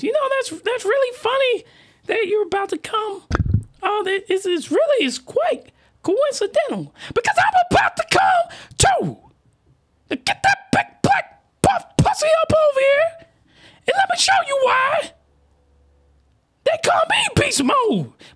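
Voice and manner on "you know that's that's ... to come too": very high, dainty little character voice. Telling a sexual story, voicing one of its characters: put-on character voice. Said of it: "I gotta do the voice".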